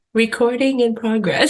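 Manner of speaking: put-on disappointed recording voice. Imitating the recording lady who always sounds disappointed: imitating a disappointed recording voice. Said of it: "sound disappointed with us".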